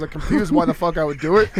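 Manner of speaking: ordinary talk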